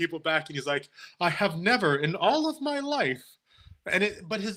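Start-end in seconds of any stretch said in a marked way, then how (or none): 1.2-3.2 put-on booming, room-filling voice with rising pitch. Retelling a stranger whose voice made the store look: imitating a loud, carrying fan voice. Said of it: "the tone of his voice carry".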